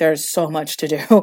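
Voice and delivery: ordinary talk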